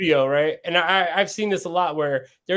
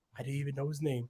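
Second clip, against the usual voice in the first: very quiet, hushed, low-key promo-style voice; 3 semitones lower, 14 dB quieter than usual. Imitating a wrestler's less believable promo: imitating a quiet promo. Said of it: "when he gets all quiet".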